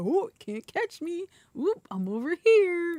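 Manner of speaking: acted, very high, swooping, drawn-out, sing-song teasing taunt. Retelling dodging an enemy in a fight: retelling a teasing taunt. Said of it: "Just teasing the hell out of him".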